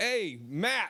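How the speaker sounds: high hollering. Recounting stopping between jokes to call out to someone: retelling a yell. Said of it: "I just start yelling".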